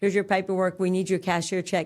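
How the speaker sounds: normal talking voice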